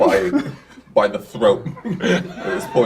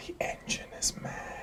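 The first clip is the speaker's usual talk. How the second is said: close, soft, hushed whisper. Speaking as a character who gets close to Adam: whispering in his ear. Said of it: "I whisper in his ear".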